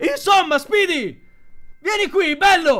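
shouted. Powell calls out to the robot speedy: shouted. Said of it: "Powell gridò".

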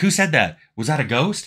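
high, spooked, nervous, fearful tone. Voicing a character reacting to an invisible player: acted fearful remark. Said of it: "they'd make a fearful comment like".

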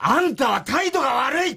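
mock very high, shrill, loud, angry voice. Retelling how the company president scolded him, mimicking angry scolding. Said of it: "ざん怒られた".

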